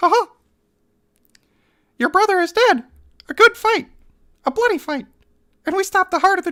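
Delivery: very high-pitched, squeaky cartoon voice. Picking a voice for a character's lines, settling on Mickey Mouse voice. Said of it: "Mickey Mouse it is then".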